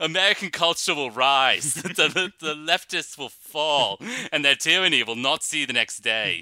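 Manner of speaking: put-on British accent, loud, high, declaimed. Mocking a man the speakers call a ghoul: mimicking a faux british accent. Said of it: "he has this faux British accent where he's like".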